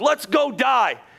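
mock heavy sarcasm. Acting out a doubting follower's reply about going back: imitating sarcastic remark. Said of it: "He's being sarcastic".

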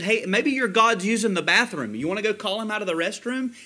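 cutting, ironic, sarcastic, mocking. Retelling what the prophet said about their god: imitating sarcastic mockery. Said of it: "He was being sarcastic. He was mocking them".

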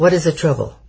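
serious, demanding voice. An army officer steps to the table to ask about the trouble, stern. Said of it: "Stern and very serious".

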